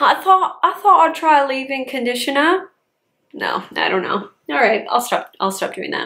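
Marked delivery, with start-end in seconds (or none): 0.0-2.7 fake rural British accent, much higher pitch. Introducing a leave-in conditioner, trying a bad country British accent. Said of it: "That's like country British".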